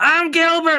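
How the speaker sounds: over-the-top, very high-pitched comic voice. Contrasting the call with the over-the-top Gilbert Gottfried comic voice. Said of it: "the over the top".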